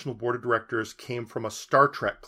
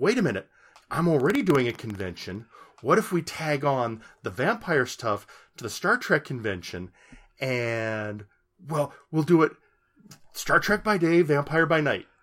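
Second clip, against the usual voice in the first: excited voice. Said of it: "And he went".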